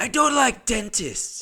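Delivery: male voice, done very high-pitched. Retelling a courtroom moment, the speaker repeats the murderer's words, doing his voice. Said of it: "I'm just gonna do his voice".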